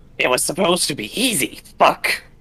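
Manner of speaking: screeched out, high-pitched and loud. Narrator voices the Cobalt Wizard speaking up amid the gore, shrill Cobalt Wizard voice. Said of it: "you hear the shrill voice of the Cobalt Wizard speak up".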